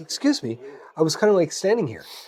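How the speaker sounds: mock-courteous, careful, polite, mild tone. Retelling speaking to someone who cut in line: imitating own polite request. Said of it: "but I do it politely".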